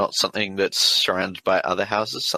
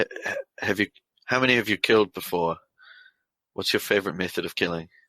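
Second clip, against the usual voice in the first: quiet whisper in a put-on voice. Voicing a character turning to Richard: whispering in character. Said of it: "kinda whisper so you can hear me".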